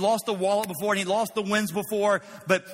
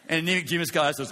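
plain

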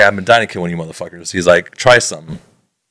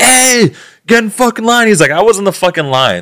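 put-on scream, higher; 14 semitones higher than usual. Retelling a gas station argument, imitating someone screaming. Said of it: "screaming out of his car".

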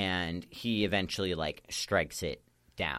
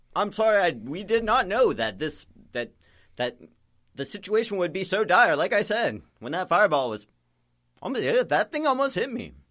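very high, booming, slow and swooping voice; 13 semitones higher, 9 dB louder than usual. Voicing the character Lionel helping a player up: Lionel character voice. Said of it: "He's like".

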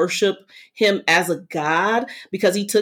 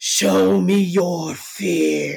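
threatening, gravelly, rough, menacing villain voice. Retelling a movie scene where the villain comes down, doing the villain's voice. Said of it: "I'm going to, you know, do the voice".

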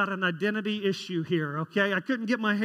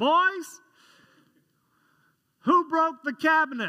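mock fatherly calling voice, higher; 8 semitones higher, 4 dB louder than usual. Retelling Dad calling from across the house: imitating Dad saying Boys. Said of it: "that's how he says it".

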